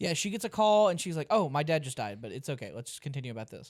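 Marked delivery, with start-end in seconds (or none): 1.3-3.7 mock nonchalant, casually indifferent tone, lower. Retelling a character's reaction to her dad dying: imitating a nonchalant tone. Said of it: "it's so nonchalant".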